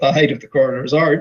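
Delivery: mocking, sardonic, dry, sarcastic praise. Mocking a mexican coroner's forensic findings: sarcastic. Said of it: "I say sarcastically".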